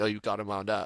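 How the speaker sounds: put-on teasing, joking tone. Recounting how an opponent's teammate teased him during a game, retelling a teasing joke. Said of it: "kind of joking".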